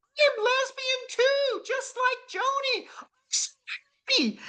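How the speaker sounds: shrill, very high, joyful shout. Retelling how a woman with a walker yelled to the other residents: retelling a yell. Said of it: "she yells at the top of her voice".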